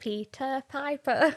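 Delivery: put-on quiet, childlike voice. Recalling how they said it as a child, in a quiet childlike voice. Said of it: "I turned into my childhood form and go".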